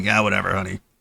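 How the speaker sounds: low, bored, indifferent, can't-be-bothered brush-off. Acting out an uninterested wife smoking and filing her nails: bored dismissive new wife. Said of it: "smoking a cigarette, filing her fingernails, being like".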